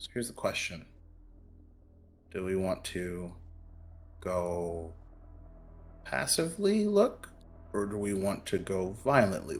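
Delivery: very quiet, barely audible whisper. Voicing a character who asks the party how to search: whispering in character. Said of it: "will kinda whisper".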